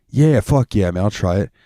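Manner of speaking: put-on heavy New York accent, laid on thick. Retelling how a man who loves spicy food accepted your hot sauce, imitating a thick New York accent. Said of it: "he's got a real thick fucking New York accent".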